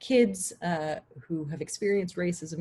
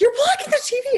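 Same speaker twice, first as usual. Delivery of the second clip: put-on very high, very loud, shrill, ear-splitting child scream; 10 dB louder than usual. A parent recounts their kids reacting during a commercial: imitating kids screaming. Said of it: "they're screaming at me like".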